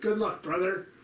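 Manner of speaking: hammed-up, put-on wrestler voice. Reading out Raptor's message, with Hulk Hogan voice on brother. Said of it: "I said it with the Hulk Hogan".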